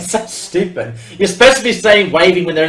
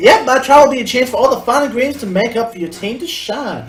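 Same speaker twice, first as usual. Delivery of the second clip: put-on high, young teenage girl character voice; 6 semitones higher than usual. Voicing a character while playing a Pokemon game, in a teenage girl voice. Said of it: "Teenage girl".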